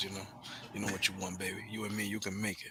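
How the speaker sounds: soft, sultry, seductive voice. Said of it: "my sexy voice".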